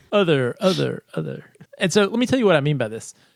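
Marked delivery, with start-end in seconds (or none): 0.1-1.4 cool echoing effect on the word other. Introducing a segment title to Dan, saying it with a cool echo effect. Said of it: "You say it with like a cool echo effect".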